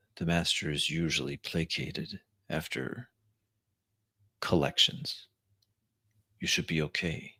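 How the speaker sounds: soft, half-whispered delivery. In a role-play, the servant half-whispers back an answer about the danger. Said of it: "in a whisper back".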